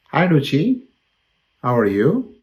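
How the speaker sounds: taken-aback, surprised. Answering a phone call and greeting the caller Ruchi, surprised. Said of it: "You sound surprised".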